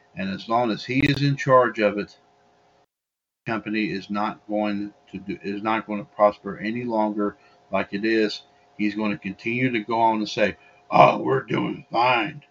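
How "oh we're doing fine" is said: gruff, rough-edged voice, dragged slow. Imitating Vince McMahon insisting things are going well: gruff Vince McMahon voice. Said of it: "That's my gruff Vince McMahon voice".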